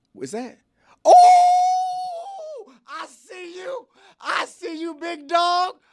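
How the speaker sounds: put-on very high, loud voice, climbing in pitch. Acting out a greeting from a video, in a high-pitched voice. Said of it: "it also comes with a high pitched voice where it's like".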